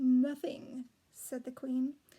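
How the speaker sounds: ordinary delivery, nothing marked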